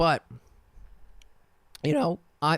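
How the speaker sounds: sudden voice crack breaking mid-phrase. Chatting about burping at the Oscars, voice cracking. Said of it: "another voice crack".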